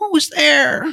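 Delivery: put-on very high, loud, shrill old lady voice. Retelling a voice heard from upstairs while exploring a building, old lady voice. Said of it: "That's just old lady voice".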